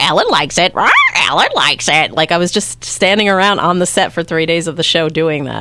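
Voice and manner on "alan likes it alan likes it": swooping, sing-song parrot voice, repeating itself. Asked by the interviewer to show his parrot role, he performs: parrot voice. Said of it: "Let me hear your parrot".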